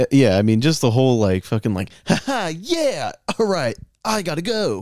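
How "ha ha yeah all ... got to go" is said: very high, slow, drawn-out improv-performer voice. Retelling a bad improv show, imitating an improv performer. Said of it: "that was your impression of a person doing improv?".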